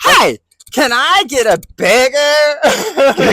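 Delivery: shrill, very high, very loud, drawn-out anime character voice. Imitating anime fans ordering food in Japan: imitating anime-style Japanese talk. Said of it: "they're talking anime Japanese".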